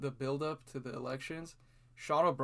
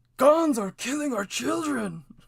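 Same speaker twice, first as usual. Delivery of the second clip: very high, very loud, shrill shouting outburst; 10 semitones higher, 10 dB louder than usual. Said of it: "the Joe Biden comment where he's like".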